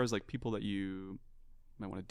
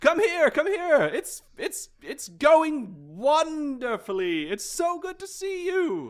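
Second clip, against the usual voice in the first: very loud, high, shrill, showy, precocious halfling voice; 10 dB louder than usual. Voicing a halfling writer who is greeted by name: loud precocious halfling voice. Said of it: "whose voice is very precocious and loud".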